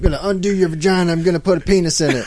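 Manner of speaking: southern drill sergeant voice. Riffing on a plan to toughen up children, sudden southern accent. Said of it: "a southern accent all of a sudden".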